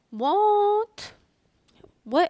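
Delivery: high, loud, shocked disbelief.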